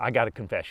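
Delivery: put-on serious tone. Retelling how a golf partner on hole 16 confessed something, in a put-on serious tone. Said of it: "got real serious".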